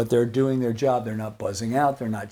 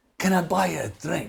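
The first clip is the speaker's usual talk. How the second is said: put-on heavy Scottish accent, laid on thick, pitched up; 5 semitones higher than usual. Retelling an older scottish gentleman offering the bass player a drink, in a thick scottish accent. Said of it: "in this really thick Scottish accent".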